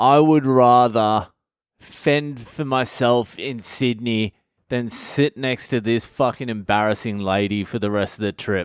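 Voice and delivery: ordinary talk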